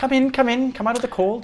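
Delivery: very high, friendly, welcoming little halfling woman voice. Voicing a friendly halfling lady greeting visitors at her door: friendly halfling lady voice. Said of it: "she gestures for you to sit down".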